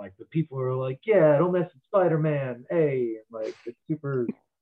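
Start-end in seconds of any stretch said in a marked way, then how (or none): 1.0-3.1 put-on New York accent. Describing New York crowds in a superhero movie, Spider-Man 2 New York crowd impression. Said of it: "that's me doing an impression".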